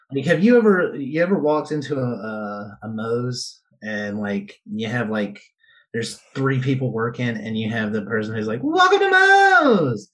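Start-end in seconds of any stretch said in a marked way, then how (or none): 8.7-10.0 put-on excitement, much higher, louder. Speaker imitates the new hire greeting customers at Moe's, imitating an excited greeting. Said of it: "the most excited person is".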